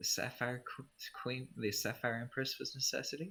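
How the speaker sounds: very quiet, barely audible mutter under the breath. A character replies, speaking under her breath. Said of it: "she kind of says under her breath".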